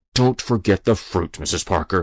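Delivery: spoken through gritted, clenched teeth. Reading a story aloud, voicing the inspector's line, through gritted teeth. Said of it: "he said through gritted teeth".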